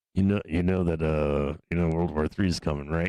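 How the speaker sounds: mock hushed voice. Acting out a friend warning that war is coming: imitating someone talking low. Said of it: "Why you talking so low right now?".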